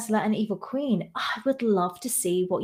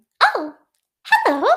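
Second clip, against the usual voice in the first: loud, very high, squeaky voice; 10 semitones higher, 8 dB louder than usual. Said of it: "I just go really high and squeaky".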